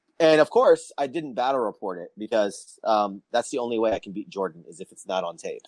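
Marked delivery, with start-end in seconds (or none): none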